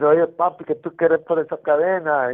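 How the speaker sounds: put-on mimicked Puerto Rican accent. Retelling how a friend fresh from the island asked for a chain: imitating a Puerto Rican man's speech. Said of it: "you know how they talk".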